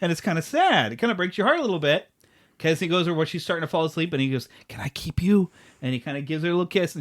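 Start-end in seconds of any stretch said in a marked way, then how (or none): 4.7-5.5 stage whisper, meant to carry. Retelling a scene where a ghost leans over a girl falling asleep: Casper whispering. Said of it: "the first time he whispers is when he's a ghost".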